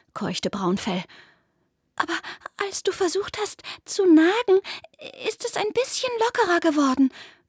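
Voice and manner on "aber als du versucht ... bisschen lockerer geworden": hopeful, with slightly raised pitch. Caught in a fence, one creature answers its friend's failed attempt, hopefully. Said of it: "sagte Graufell hoffnungsvoll".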